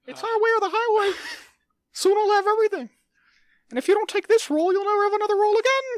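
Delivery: squeaky, very high, loud cartoon voice. In a comedy bit, playing the mouse: Mickey Mouse voice. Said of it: "this week's episode of Mickey Mouse Voice".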